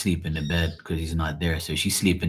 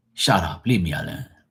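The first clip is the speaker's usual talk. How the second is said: put-on irritated, aggravated voice. Retelling what the speaker's mom says when aggravated, imitating aggravated mom. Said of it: "That's what she'll say".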